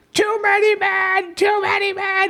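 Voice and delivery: play-acted very high, drawn-out scream. Retelling how a mom yelled through the netting: imitating a mom screaming. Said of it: "She's screaming through the netting".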